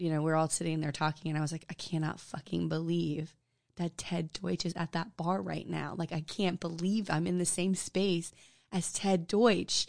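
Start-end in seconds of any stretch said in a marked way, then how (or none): 1.7-9.9 put-on muttering under breath, quieter. Retelling own past words said among friends: imitating muttering under breath. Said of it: "under my breath".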